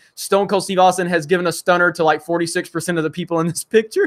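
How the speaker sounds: usual speaking voice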